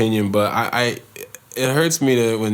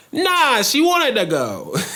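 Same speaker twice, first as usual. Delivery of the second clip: very high, sing-song, put-on New York accent. Telling a joke about two coworkers from New York, New York accent. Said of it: "New York accent".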